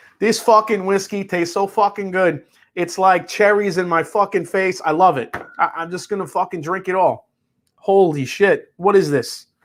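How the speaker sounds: laid-on Jersey wiseguy accent. Describing the taste of a whiskey to listeners, in a put-on New York accent. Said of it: "best New York accent".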